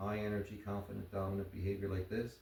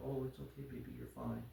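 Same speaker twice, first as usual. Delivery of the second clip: soft, soothing, comforting and reassuring tone; 6 semitones lower, 5 dB quieter than usual. Showing how people talk to a fearful dog, imitating a reassuring tone. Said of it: "You're using reassuring tone with the nervous dogs".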